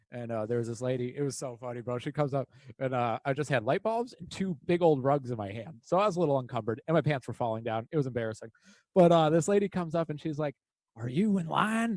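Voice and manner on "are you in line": put-on classic Southern belle accent. Retelling a funny encounter with a lady while shopping, Southern belle voice. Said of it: "she had that classic Southern belle sound".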